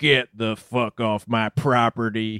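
deep character voice, dropped way down. Describing a joke TV segment, imitating Sam Elliott ordering someone off his property.

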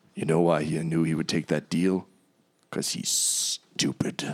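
soft, hushed whisper. Voicing a bow that whispers to a player: whispering talking bow. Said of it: "the bow whispers to you".

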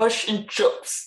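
New Zealand accent. Podcast guest, asked for their best accent, answering in a Kiwi accent. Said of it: "giving us your best Kiwi accent".

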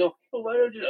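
put-on very high-pitched, babyish, whiny baby voice. Retelling how someone started talking: imitating a baby voice. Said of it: "start doing that baby voice".

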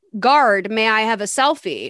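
plain

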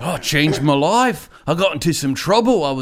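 terrible put-on Australian accent. Retelling a man's reply about a show they both saw: terrible Australian accent. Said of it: "I'm going to do a terrible Australian accent".

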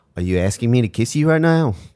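put-on New Zealand accent. Retelling how a man answered her request for a kiss, in a New Zealand accent. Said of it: "I couldn't do that accent".

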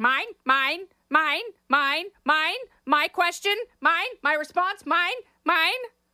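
high-pitched seagull voice like a cartoon seagull. Mocking candidates on stage as squawking for questions: seagulls from Nemo voice. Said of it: "they are like the seagulls in Nemo".

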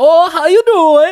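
put-on hammed-up Swedish accent, very high, very slow, loud. Describing a movie character's annoying voice: over-the-top Swedish-sounding Prince Anders voice. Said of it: "over the top, like, like, Swedish sounding".

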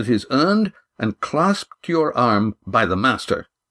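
ordinary delivery

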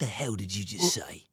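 low, quiet British tough-guy voice. Friends comparing accents, one doing a Jason Statham impression. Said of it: "Statham is more like".

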